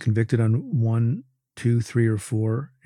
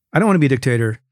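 mock sly, tongue-in-cheek, wily, knowing delivery; 5 dB louder than usual. Retelling how Trump answered the dictator claim: imitating Trump's wily delivery. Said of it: "I think in a very wily way".

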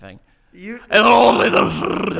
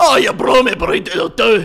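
put-on Scottish-sounding accent, higher and louder; 4 semitones higher, 4 dB louder than usual. Trying out a Yorkshire accent after reading it from a list: put-on accent sounding like Shrek. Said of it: "you just sound like Shrek".

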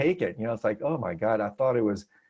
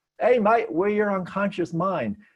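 put-on Australian accent, pitched up; 9 semitones higher than usual. Repeating what the man in their dream said, in an australian accent. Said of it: "in this totally kind of Australian accent".

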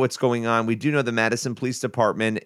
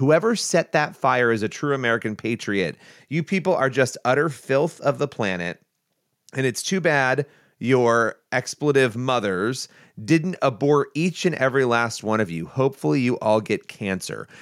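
ordinary delivery

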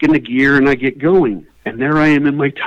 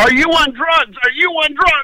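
very high, shrill, shouted yell; 13 semitones higher than usual. Retelling what the deputy sheriff yelled on driving up: imitating an officer yelling. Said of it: "the first thing he yells is".

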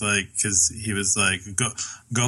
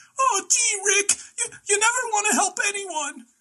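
put-on old man voice sounding like a child, much higher. Explaining how the character sounds, the speaker does a Morty voice. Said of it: "an old person trying to sound like a young kid".

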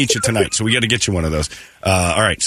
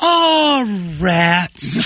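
mock-sad put-on voice, much higher; 11 semitones higher than usual. Radio host pictures how a caller would react, imitating Corinne's 70s sadness. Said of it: "Like she's got 70s sadness".

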